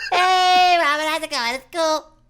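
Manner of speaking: very high, loud, squeaky helium voice. Asked by another speaker for a high-pitched voice, he does a high-pitched helium voice. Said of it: "That kind of sounds like helium, right?".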